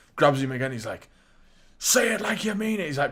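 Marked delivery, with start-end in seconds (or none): 1.8-2.9 mock full-on shout, pitched very high. Retelling a wrestler grabbing the announcer: imitating someone shouting. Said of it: "proper shouting at him".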